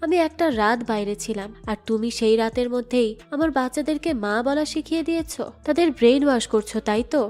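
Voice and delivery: ordinary talk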